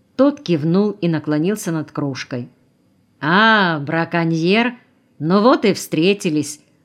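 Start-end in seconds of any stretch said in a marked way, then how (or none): 3.2-6.6 mocking, taunting, slower. Introduced to the geologist, a man greets him without offering his hand: mocking. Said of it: "насмешливо проговорил Колосов".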